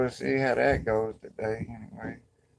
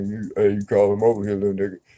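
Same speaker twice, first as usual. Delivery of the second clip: put-on deep voice, pitched lower; 7 dB louder than usual. Retelling how an older man used to call the speaker over, imitating his deep voice. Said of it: "He had a deep voice".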